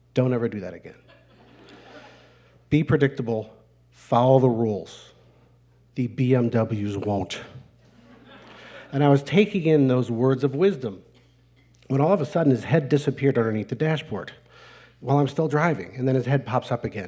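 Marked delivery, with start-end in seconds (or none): 0.2-7.4 put-on quiet, insistent voice. Retelling a father's warning during a driving lesson: imitating quiet insistent voice. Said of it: "very quietly but insistently".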